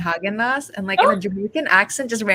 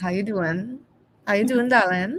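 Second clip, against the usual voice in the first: Trinidad-accented speech. Showing the others how to talk like a Trini: smooth Trinidadian accent.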